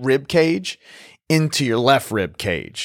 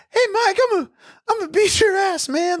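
mock quavering, very high-pitched voice. Imagining threatening a boxer named Mike to his face: imitating a quivering voice. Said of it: "voice would be all quivering".

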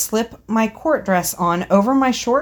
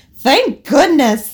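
loud yell brimming with gratitude; 4 semitones higher, 5 dB louder than usual. After its mistress covers the cage, the parrot cries out, grateful yell. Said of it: "the parrot yelled with a world of gratitude in its voice".

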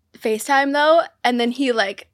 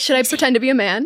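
plain

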